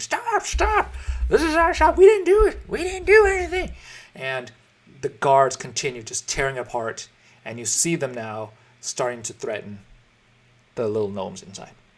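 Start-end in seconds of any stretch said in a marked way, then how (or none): 0.0-3.7 very high, shrill, loud, frantic panicked screaming. Voicing shopkeepers as guards tear down their shop: screaming in panic. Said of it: "the shopkeepers inside just screaming".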